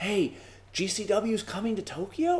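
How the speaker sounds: hushed half-whisper. Retelling fans at bar events asking a question: imitating fans half-whispering. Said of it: "three or four guys come up and whisper to me".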